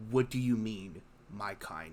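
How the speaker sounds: seething, rage-filled, furious voice. A player voices her character dangling a merchant by his shirt, full of rage. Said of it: "her tone is full of just rage".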